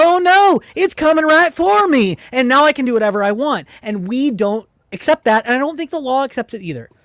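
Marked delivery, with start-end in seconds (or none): 0.0-3.7 mocking, sarcastic cartoon voice, high and loud. Mocking the other side's argument in a debate: mocking South Park quote. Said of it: "the South Park analysis of".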